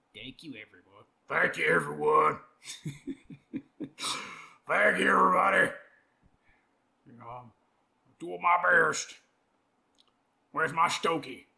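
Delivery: put-on, mock deep voice. Imitating the man being discussed, thanking everyone, in a put-on deep voice. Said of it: "so I can get my voice even deeper".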